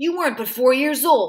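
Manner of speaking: ordinary delivery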